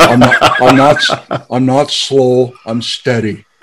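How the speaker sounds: very slow, unhurried, plodding delivery. Breaking out an impression of a favorite guest: Greg Freese impression. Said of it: "break out my Greg Freese impression".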